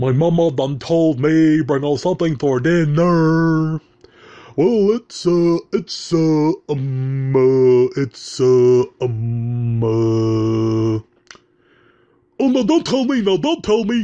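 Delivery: very slow, drawn-out, high, swooping cartoon voice. Doing an impression of a lovable character, put-on cartoon character voice. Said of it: "trying to do an impression of him there".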